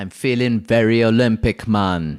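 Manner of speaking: imitated Jamaican accent. Told to get in character, repeating a co-host's line in a jamaican accent. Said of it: "I promised a Jamaican accent".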